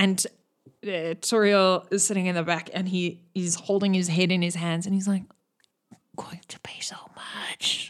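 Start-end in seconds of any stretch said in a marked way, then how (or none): 6.2-7.9 faint, very quiet whisper under the breath. Voicing a character holding his head after hearing the price: whispering. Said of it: "he whispers".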